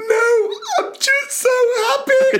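put-on very high, weepy, drawn-out sobbing speech. Retelling what a player said in tears after scoring: imitating someone crying. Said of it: "she was just in floods of tears".

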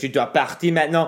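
play-acted, heated outburst yelling in French. Retelling telling a woman to leave: imitating yelling in french. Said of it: "I started yelling in French".

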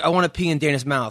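acted flat, straight-faced, accountant-like tone. Describing a man's shocking remark, retelling it deadpan like an accountant. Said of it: "he says it like an accountant".

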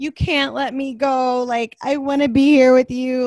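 mock loud sobbing, pleading through tears. Retelling a contestant crying to him: imitating someone crying. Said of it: "she's crying to him".

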